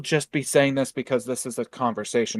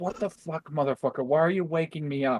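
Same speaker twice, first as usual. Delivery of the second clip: high, annoyed, grumpy dog voice; 5 semitones higher, 4 dB quieter than usual. Adding what the woken dog seemed to think: voicing the woken dog's annoyance. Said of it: "Just like".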